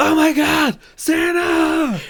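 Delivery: very high, loud scream like an elf. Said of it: "I scream, you know, like the elf".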